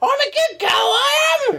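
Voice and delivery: shrill, very high screech at top of voice. Recalling a friend in the middle of London, retelling Martin's screech.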